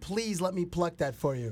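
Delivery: mock pleading in a woman's voice. Imitating women volunteering to a player: imitating women begging. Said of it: "begging him".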